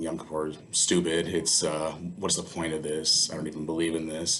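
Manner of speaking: ordinary delivery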